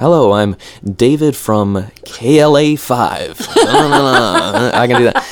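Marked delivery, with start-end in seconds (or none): 0.0-3.5 put-on American accent, switched into. Showing which accents they can do, demonstrating an american accent. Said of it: "American, I can be here".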